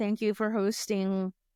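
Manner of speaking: normal talking voice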